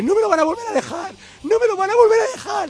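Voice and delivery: high plaintive lament.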